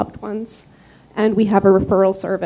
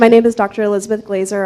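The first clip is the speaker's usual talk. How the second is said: louder, quicker, projected voice. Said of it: "Can you speak a little louder?".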